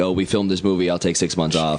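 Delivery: ordinary talk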